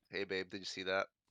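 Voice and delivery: hushed, sidelong half-whispered aside. Half-whispering in character to a loved one during a game turn: half-whisper. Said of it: "I'm gonna whisper to my love here".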